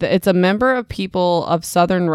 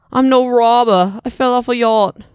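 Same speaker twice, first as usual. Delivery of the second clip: put-on British accent, raised; 6 semitones higher, 5 dB louder than usual. Narrating a story, voicing the character held at gunpoint in a British accent. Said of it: "I sound British now".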